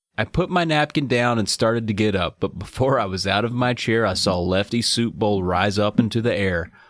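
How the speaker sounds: ordinary talk, nothing marked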